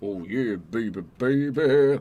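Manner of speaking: low, slow drawling voice. Voice actor describing the character voices he does, deep Val voice. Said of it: "deep voice".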